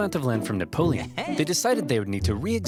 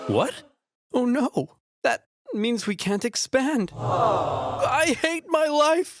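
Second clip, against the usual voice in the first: shocked gasping voice, pitched much higher; 12 semitones higher than usual. Thomas hears that people already live out west, gasping in shock.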